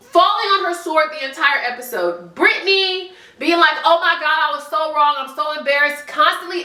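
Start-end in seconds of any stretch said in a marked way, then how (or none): none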